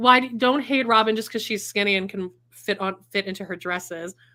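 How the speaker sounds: plain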